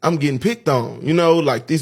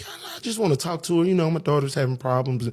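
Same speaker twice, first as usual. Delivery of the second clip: put-on soft, polite, proper professional voice; 4 dB quieter than usual. A mother retells asking to talk with the teacher, putting on her professional voice. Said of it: "I'm putting my professional voice on".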